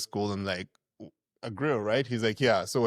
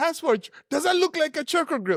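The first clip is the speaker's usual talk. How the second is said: play-acted piercing, very high shrieking scream; 4 dB louder than usual. Retelling how the mother-in-law screamed about the grill: imitating mother-in-law screaming. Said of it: "So she's screaming".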